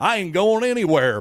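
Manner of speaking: loud, high-pitched declaring tone. Giving a take and quoting a coach's vow to stay: imitating Dabo Swinney. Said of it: "sound like Dabo Swinney here going".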